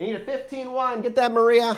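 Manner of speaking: very high, obnoxious gum-chewing counter lady voice. The counter lady calls a customer's shoe size over to maria, chewing gum obnoxiously. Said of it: "The ladies at the counter kind of looks up, chewing gum just obnoxiously, / The ladies at the counter kind of looks up".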